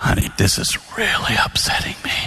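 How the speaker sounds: soft, half-volume voice. Retelling what they said to Jane, softly at half volume. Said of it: "lower it to half your normal volume".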